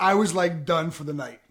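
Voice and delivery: plain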